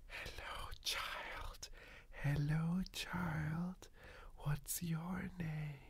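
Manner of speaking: put-on slow, hushed monster whisper with "child" drawn out. Voicing the boogeyman under the bed calling to a child: boogeyman whispering. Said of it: "the boogeyman sees this and starts whispering".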